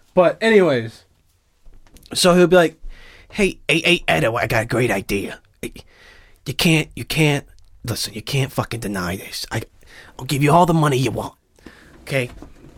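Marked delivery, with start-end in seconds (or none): 3.3-11.4 movie-mogul voice, persuasive salesy pitch. Acting out a bit where the movie producer offers money: Harvey Weinstein voice. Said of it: "Do his voice".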